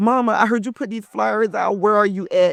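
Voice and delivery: tearful, pleading voice through sobs. Retelling her son's phone call, imitating her son crying. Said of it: "and he's crying".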